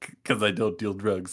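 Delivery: mocking put-on voice. Retelling a story where one man mocks Igor, mockingly imitating Igor. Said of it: "like mocking him".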